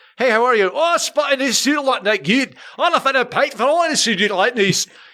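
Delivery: put-on Glasgow accent. Describing Glasgow, the speaker imitates a local in a mock Glaswegian accent. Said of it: "a Glaswegian accent to me sounds like an Irish person drowning".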